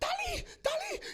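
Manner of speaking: acted-out shout. Retelling a frightened night, imitating brother shouting: retelling a shout. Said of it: "E ele gritava".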